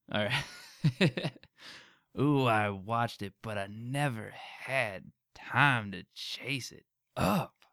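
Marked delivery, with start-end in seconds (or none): 2.2-7.4 slow, unhurried drawl with every word dragged out. You picked a line with some words; say it again, this time in a Negan voice. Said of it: "I'll say it like Negan".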